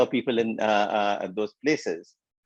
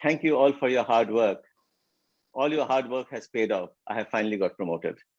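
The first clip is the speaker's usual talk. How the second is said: heavily sarcastic, ironic and mocking. Retelling a manager's farewell speech at work: imitating a sarcastic farewell speech. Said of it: "very sarcastically he said that".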